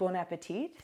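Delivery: ordinary delivery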